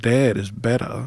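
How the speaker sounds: put-on old man's Maine accent. Showing friends how the old guy in the original film talks, Pet Sematary old guy's Maine accent. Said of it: "he does the accent, but the old guy, where he's like".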